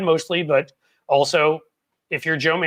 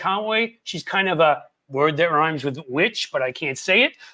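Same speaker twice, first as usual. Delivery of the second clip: usual speaking voice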